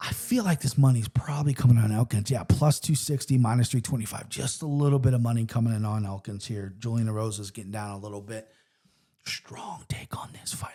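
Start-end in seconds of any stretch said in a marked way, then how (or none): 9.2-10.7 whispering, hushed and quieter. Giving a betting take on a fight: whispering. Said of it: "I don't know why I'm whispering".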